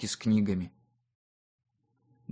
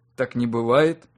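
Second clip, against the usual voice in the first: ordinary delivery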